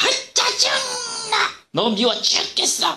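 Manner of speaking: high, slow, shouted irritated outburst. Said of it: "이런 말을 하라고 시켰어요".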